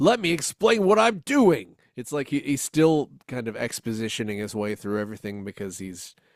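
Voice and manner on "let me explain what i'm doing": ape voice, very high-pitched. Mocking how the Urko voice actor reads his lines: imitating the Urko voice actor. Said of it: "he's kind of doing an Urko voice".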